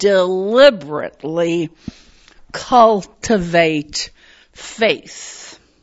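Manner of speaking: deliberately said with heavy, strong stress. Talking about cultivating faith, announcing the emphasis: stress on deliberately. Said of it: "I'm going to emphasize that word".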